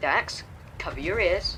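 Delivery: plain reading voice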